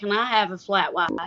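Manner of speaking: thick, strong, laid-on put-on Alabama accent. Speaker retelling ordering at a coffee shop, practicing a character's strong alabama accent. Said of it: "the character had a very strong Alabama accent".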